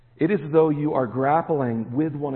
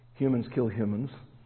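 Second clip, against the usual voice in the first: normal talking voice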